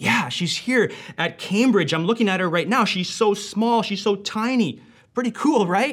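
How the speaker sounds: thrilled, excited gushing chatter, high-pitched. Retelling a brother's late-night phone call: imitating Peter's excitement. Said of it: "That's why he was so excited".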